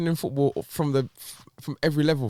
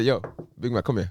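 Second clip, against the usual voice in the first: heavy mafia-style gangster voice; 4 semitones lower than usual. Acting out the club recruiting a player, mafia style. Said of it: "make it some Bayern sound like the mafia".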